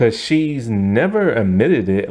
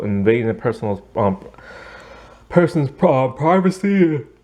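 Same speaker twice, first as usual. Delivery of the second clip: talking through a yawn, slower; 3 semitones higher than usual. Late at night, telling a story about Claire and Erin, yawning while talking. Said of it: "Sorry for yawning".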